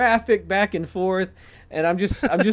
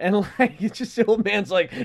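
ordinary delivery

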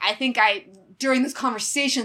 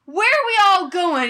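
mock punchable tone, very high-pitched and loud; 11 semitones higher, 6 dB louder than usual. Retelling a movie character's line at a dance, imitating a punchable tone. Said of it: "in that punchable way".

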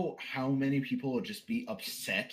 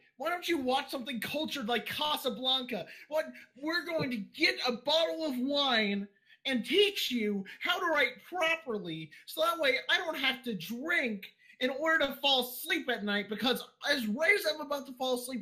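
mock voice-cracking, higher; 14 semitones higher than usual. Imitating another speaker, with their voice crack. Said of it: "you got my voice crack perfectly".

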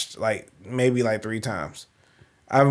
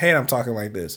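plain

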